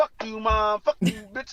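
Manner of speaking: put-on child's voice. Retelling a comedy bit, the kid sent to timeout: imitating a kid cursing at mom. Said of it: "Johnny like".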